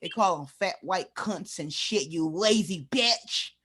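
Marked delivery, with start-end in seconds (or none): 2.1-3.5 put-on little country voice, country accent. Telling a friend how some men talk to their women, in a put-on country voice. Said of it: "I put my little country voice".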